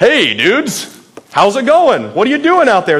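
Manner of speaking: mock playful, teasing, sing-song sarcasm. Voicing Jesus calling to fishermen who caught nothing: sarcastic and playful. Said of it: "He's being sarcastic".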